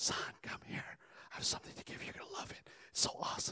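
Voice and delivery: barely audible, hushed, breathy whisper. Telling a joke, acting out a father calling his son closer, whispering. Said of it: "why are you whispering?".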